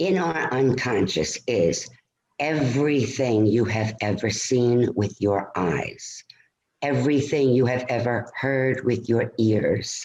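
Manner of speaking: very slow, spaced-out delivery. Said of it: "I'm gonna say it very slowly".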